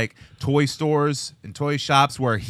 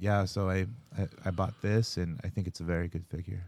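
mock very low, dead-level, flat droning monotone; 7 semitones lower, 11 dB quieter than usual. Mocking a dull action figure podcast: imitating monotone podcasters. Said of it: "they're very monotone".

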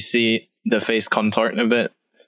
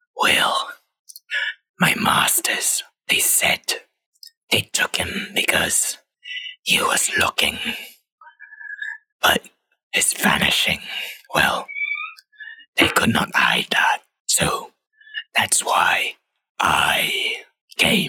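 slow, evasive, hissing creature voice; 12 semitones higher than usual. A captured shapeshifter answers the party's questions about its masters, hissing. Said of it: "It's a shapeshifter. / the rest of this demented creature changes into this long limbed blue humanoid, / I'm merely a tool. / and it hisses at you".

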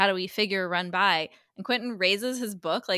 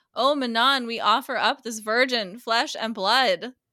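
mock yelling, shouting; 3 semitones higher, 5 dB louder than usual. Recounting a story, the speaker acts out a masked robed figure with a knife, retelling a yell. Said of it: "And one has a knife and yells".

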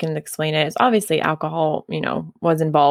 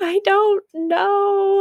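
very high, tearful bawling, know drawn out. Retelling being asked what was wrong while crying: imitating own past bawling. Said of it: "I'm just bawling my eyes out".

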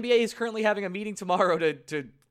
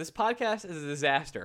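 usual speaking voice

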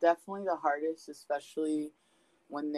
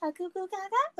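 sudden acted cheery switch, very high, drawn out. Describing how she suddenly acts toward the speaker, imitating someone all happy. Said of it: "like all happy and shit all of a sudden".

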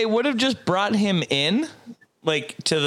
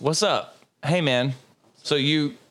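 ordinary talk, nothing marked

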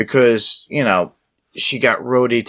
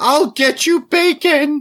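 put-on scream, higher. Retelling a character's line: imitating a scream. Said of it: "she screams out".

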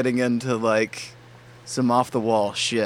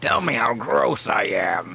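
slow, rough, creaky troll voice. Quoting a comedian, in a troll voice. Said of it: "I give him a troll voice".

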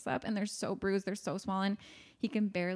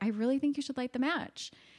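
put-on calm, composed voice, slightly higher; 6 semitones higher than usual. Retelling a scene, quoting Annie as she pushes him: imitating Annie's calm voice. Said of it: "keeping her voice calm".

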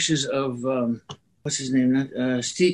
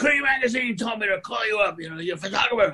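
woman's high, shrill screaming; 7 semitones higher than usual. Speaker recounts a woman calling him on the phone, retelling a woman screaming. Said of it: "She's screaming like".

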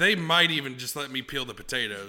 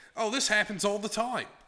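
put-on Australian accent, pitched up; 9 semitones higher than usual. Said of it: "your Australian accent's way better than mine".

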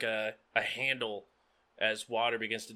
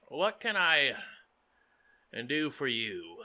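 put-on aged worn-out android voice; 2 semitones higher than usual. Voicing an old rusted android waving at the listeners, in an old rusty android voice. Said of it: "Definitely an older soul".

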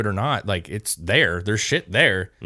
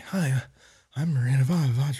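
put-on vampire-like voice, pitched higher; 4 semitones higher, 3 dB quieter than usual. Mocking how a documentary portrayed her: imitating Miranda Ivanovich. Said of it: "portrayed her like a frickin', like".

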